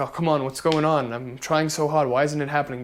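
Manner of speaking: put-on tearful, self-pitying crying voice. Retelling sitting in a room crying over having no clients: imitating own past crying. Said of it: "in my room and crying about it".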